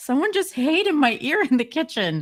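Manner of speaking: very high, panicked blurt. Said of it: "I'm like".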